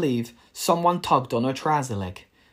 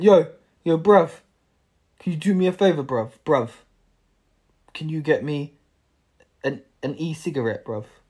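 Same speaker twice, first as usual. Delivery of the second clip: put-on teenage street youth rude boy voice; 3 dB louder than usual. Retelling what two teenagers at a corner shop asked: imitating rude boy teenagers. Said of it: "these two little rude boy teenagers went".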